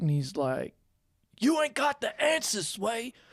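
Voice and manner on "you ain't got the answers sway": high-pitched, angry ranting. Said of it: "he starts getting, like, real, real angry".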